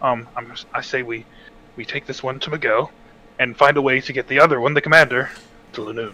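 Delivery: hushed, secretive, conspiratorial half-whisper. Proposing a plan while keeping a prisoner from hearing: half-whispering. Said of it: "I'm gonna whisper this so the prisoner can't hear us".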